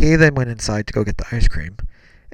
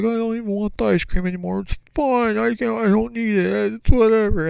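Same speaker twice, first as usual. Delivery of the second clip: acted, shrill, very high, weepy giving-up cry; 11 semitones higher than usual. Retelling sitting on a trailer bed after dad yelled, imitating own past crying. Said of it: "like crying".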